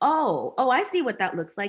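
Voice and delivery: ordinary talk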